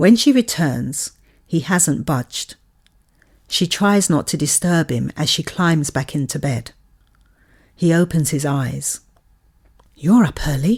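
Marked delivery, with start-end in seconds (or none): 9.9-10.8 hushed, whispered voice. A woman whispers to the man in bed as she climbs back in. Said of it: "she whispers to him".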